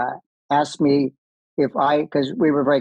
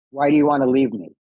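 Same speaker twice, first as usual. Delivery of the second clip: put-on stern spiritual teacher voice. Retelling what Baba asked in the greeting line: imitating Baba's stern question. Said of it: "very stern".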